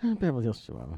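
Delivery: low, near-inaudible mumble, voice sunk. Retelling a man's answer when asked what he's doing there: imitating a barely audible mutter. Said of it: "his voice dropped almost to a sub-audible level".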